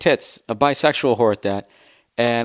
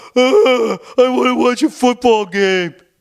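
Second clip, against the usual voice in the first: bad mocking impression with grunting voice; 12 semitones higher, 5 dB louder than usual. Retelling her boyfriend's reply about going to the restaurant, in a bad impression of her boyfriend. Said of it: "they always have to go, ugh".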